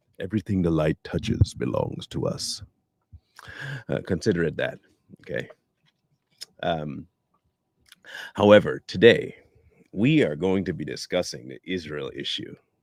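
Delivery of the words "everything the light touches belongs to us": put-on celebrity voice, congested, heavy with sinus. Joking about a heavy sinus voice: fake James Earl Jones voice. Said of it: "Call it my fake James Earl Jones".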